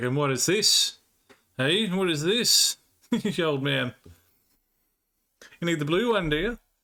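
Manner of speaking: play-acted teasing, needling, ribbing tone. Retelling finding the dad's blue packets and teasing him: retelling teasing. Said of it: "picking at him for ages".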